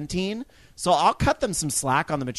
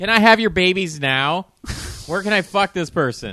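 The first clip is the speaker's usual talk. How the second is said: put-on loud, thick, dripping sarcasm; 4 semitones higher, 5 dB louder than usual. Speaker mocking people who send death threats to a teenager; heavy sarcasm. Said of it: "heavy sense of sarcasm".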